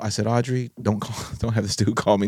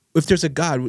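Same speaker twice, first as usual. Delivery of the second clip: put-on angry ranting voice, higher; 5 semitones higher than usual. Retelling a father's phone call, imitating someone raging. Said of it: "he was just raging".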